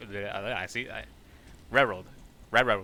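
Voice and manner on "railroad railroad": quick, loud railroad with swallowed o and a. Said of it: "I have to say it quickly".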